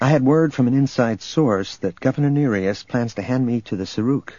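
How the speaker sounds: plain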